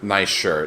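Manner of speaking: ordinary talk, nothing marked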